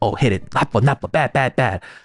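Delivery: scolding, chiding tone. Retelling how a Korean parent takes the kid's hand: imitating a Korean parent scolding. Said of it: "she'll take the kid's hand and she'll be like".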